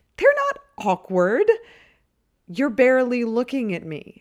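very loud, high, swooping accusing tone. Greg speaks to her after she looks away from him, accusing. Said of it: "he accuses".

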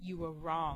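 growled, beast-like creature voice. Reading a story aloud, the creature growls in the man's ear. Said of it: "the creature growled in his ear".

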